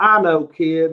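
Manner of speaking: put-on big, loud Fort Worth accent laid on thick. Retell what Danny said about the contract he sent you, in Danny's big Fort Worth accent. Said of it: "in a big Fort Worth accent".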